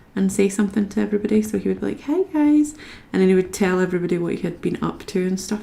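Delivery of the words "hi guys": put-on sweet, cute, higher-pitched small-kid voice. Retelling how a son used to greet viewers: imitating son's cute greeting. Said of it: "how he used to say it".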